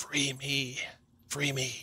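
rasping, harsh, faint, urgent, barely audible half-whisper. A beast man caught in webs begs the rescuers, in a harsh half-whisper. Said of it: "he whispers in a harsh whisper".

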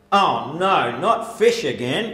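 very loud, booming, carrying voice. Retelling what a man on a train said on opening his sandwich, retelling a very loud remark. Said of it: "in a very loud voice that the whole train could hear".

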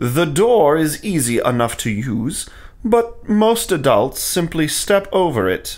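plain

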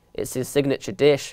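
ordinary delivery

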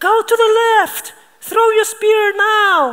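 irritating, shrill, drawn-out voice, very high and loud. Telling a story about a mammoth hunt, quoting a voice from over there: very annoying voice. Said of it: "very annoying voice over there that goes like".

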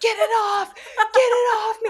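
very high, loud, drawn-out, terrified panicked scream. Retelling a frightening moment when it went for their neck, retelling a panicked scream.

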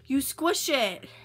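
loud, high yell.

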